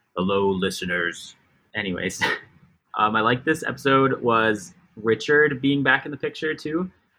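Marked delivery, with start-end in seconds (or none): 0.2-1.4 deep, announcer-style voice. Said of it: "Why do you get so much deeper when you say that?".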